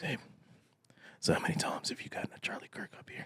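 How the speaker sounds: soft, hushed, secretive whisper. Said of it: "Why you think I'm whispering?".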